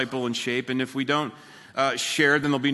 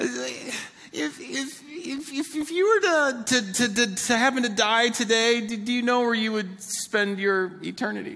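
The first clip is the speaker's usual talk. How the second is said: play-acted nervous, high-pitched stammering stutter; 10 semitones higher than usual. Retelling walking up to a fifty-year-old man, acting out nervous stammering. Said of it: "I'm like so nervous".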